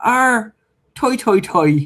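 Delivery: put-on Irish accent, very high and very drawn-out. Retelling how a friend used to mimic Irish people: Clayton's put-on Irish accent. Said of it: "an impression of, um, Irish people".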